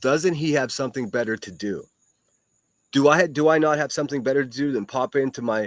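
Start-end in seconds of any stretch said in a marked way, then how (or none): none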